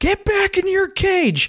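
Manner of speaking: acted, very high-pitched shrieking outburst. Retelling a scene where he phones as terrible people, imitating someone screaming. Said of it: "just screaming off".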